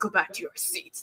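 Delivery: ominous, menacing whisper. Retelling a security guard ordering them back: imitating an ominous order. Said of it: "it was really ominous".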